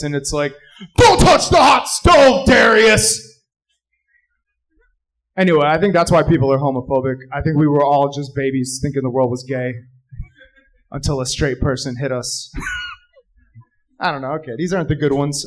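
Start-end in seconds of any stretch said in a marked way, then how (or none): 1.0-3.2 loud, slow adult shout, bellowed. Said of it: "you hear a real adult voice".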